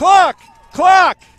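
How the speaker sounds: very loud, very high-pitched yell. Calling a game when the clock is not running: yelling into the microphone. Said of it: "I didn't mean to yell into the microphone".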